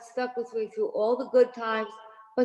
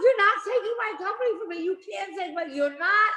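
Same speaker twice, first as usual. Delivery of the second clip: play-acted, high, hysterical sobbing through the words; 10 semitones higher than usual. Retelling pleading with a room of bankers, imitating hysterical crying. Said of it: "I was hysterical crying".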